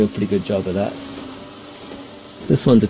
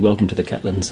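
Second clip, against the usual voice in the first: plain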